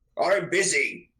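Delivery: rough, gruff shout. A dwarf, interrupted while busy, gruffly shouts back. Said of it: "he kind of gruffly shouts back".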